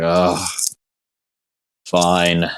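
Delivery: play-acted, reluctant, grudging groan. Describing how someone reacts when work is mentioned; imitating a reluctant groan. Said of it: "he kind of just like groans".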